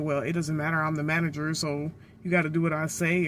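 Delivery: ordinary talk, nothing marked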